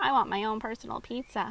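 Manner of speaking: ordinary delivery, nothing marked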